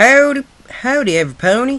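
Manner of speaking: very high, loud cartoon-style voice. Opening greeting done on a friend's dare, in an Applejack voice. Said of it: "talking in my Applejack voice".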